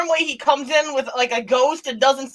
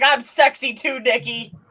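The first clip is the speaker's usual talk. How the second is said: ordinary talk, nothing marked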